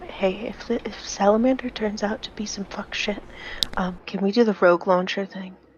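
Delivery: whispered aside. A player's character leans down to another character, whispering. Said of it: "lean down to Ren and whisper to him".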